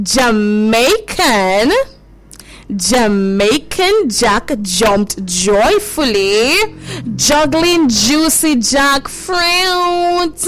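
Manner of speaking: very slow and careful, every word clearly articulated.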